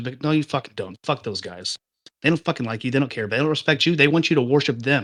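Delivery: heated, fast, worked-up, angry rant. Ranting to co-hosts who keep agreeing, the speaker admits getting heated, heated. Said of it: "I'm getting heated".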